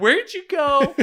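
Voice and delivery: very high yell. Retelling yelling toward the nurse during a diaper change: imitating own yelling. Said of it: "I'm just yelling in his direction".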